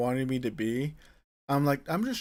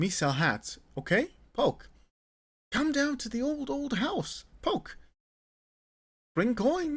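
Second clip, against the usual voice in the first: squeaky, very high, silly voice; 11 semitones higher than usual. Voicing a hat seller calling customers: hat seller character voice. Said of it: "I do not have any regrets doing that voice".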